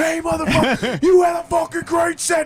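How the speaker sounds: put-on voice pitched way up, shouting as over loud music. Retelling talking to a band member over loud music: imitating shouting over loud music. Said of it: "trying to talk to this guy over loud music".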